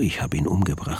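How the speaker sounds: ordinary delivery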